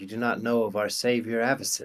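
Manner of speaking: wincing while speaking. Game master voices a character answering a player's question about a symbol, wincing as she speaks. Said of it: "kind of like winces her eyes at you and says".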